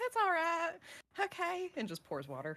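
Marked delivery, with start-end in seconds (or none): 0.0-1.7 character voice pitched up a register, higher. Playing a character calming others and offering a seat: higher voice. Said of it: "And the voice gets higher".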